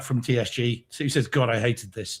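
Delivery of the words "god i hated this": ordinary talk, nothing marked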